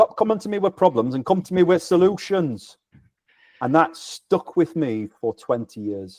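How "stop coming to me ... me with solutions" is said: put-on Yorkshire accent with voice lifted well up. Speaker quotes a man's advice that stuck with him for twenty years: Yorkshire accent. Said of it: "congratulations on a very good Yorkshire accent there".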